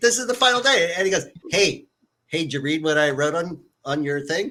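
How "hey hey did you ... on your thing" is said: acted, bone-dry, totally flat, expressionless delivery. Speaker retells what he asked them on the final day, totally deadpan. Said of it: "Like totally deadpan".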